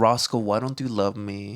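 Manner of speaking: domineering, overbearing, pushy, pressing tone. Retelling what KJ says to Roscoe: imitating KJ, overbearing. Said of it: "He's like".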